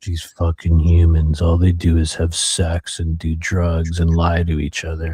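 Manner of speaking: fed-up, jaded, weary alien voice. Acting out a gray alien smoking on a ship: jaded gray alien voice. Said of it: "He's super jaded".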